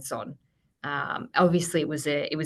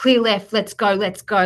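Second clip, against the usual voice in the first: put-on urgent yell, louder and higher; 5 semitones higher, 9 dB louder than usual. Retelling riding as a passenger, acting out yelling at the driver: retelling urgent yelling. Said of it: "I was like yelling at the driver".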